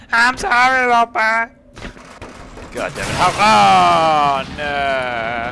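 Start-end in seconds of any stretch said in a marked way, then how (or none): 0.1-1.5 very high-pitched, loud, raised cartoon voice. Voicing a game companion who apologizes: Cleveland voice. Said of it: "he sounded like Cleveland".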